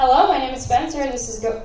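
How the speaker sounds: best retail voice, fast and chirpy.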